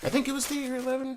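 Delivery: voice cracking. Speaker who just woke up, talking about playing cards, voice cracking. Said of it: "Am I hitting puberty?".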